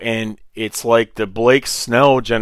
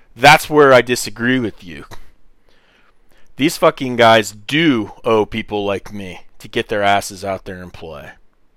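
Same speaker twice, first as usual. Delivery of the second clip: heated, impassioned, fired-up insistent delivery. Disagreeing with someone about whether these players owe people like him, passionate. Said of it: "You hear the passion in my voice?".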